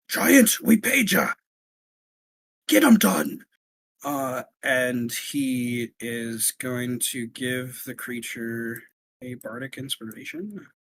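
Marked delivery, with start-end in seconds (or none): 0.1-3.4 gruff, rough dwarf voice, pitched up, echo-like. Game master voicing a dwarf speaking inwardly to a giant, dwarven inner voice. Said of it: "you hear a dwarven voice over like an inner kind of thing".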